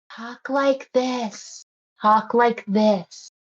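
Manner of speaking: hushed, quiet library voice. Showing a loud buddy how to talk, in a quiet library voice. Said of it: "Use your library voice".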